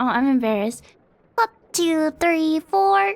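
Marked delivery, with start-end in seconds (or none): 1.4-3.1 put-on cartoon girl voice, higher pitch. Practicing impressions, attempting Bubbles from Powerpuff Girls: Bubbles voice. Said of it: "The closest I can do is".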